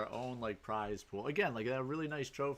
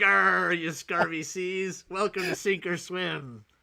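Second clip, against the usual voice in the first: booming, loud, pitched-up put-on pirate voice; 7 semitones higher, 10 dB louder than usual. Imagining opening tomorrow's stream in character; pirate voice. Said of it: "and I'm just like".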